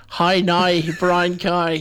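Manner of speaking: slow Northern Irish accent with shifted vowels. Showing a friend how Northern Irish differs from Irish: Northern Irish accent. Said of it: "if you say in Northern Irish".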